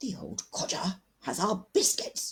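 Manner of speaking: alarmed, urgent, panicked whisper. Reading a story aloud, a character warns Henry: panicked whisper. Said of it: "Edward whispered in a panicked voice".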